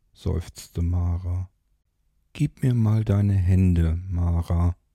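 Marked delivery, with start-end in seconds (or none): 2.4-4.8 soft, gentle voice, slower. A man speaks to a woman who has just sighed, in a gentle voice. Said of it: "sagte Rodriguez mit sanfter Stimme".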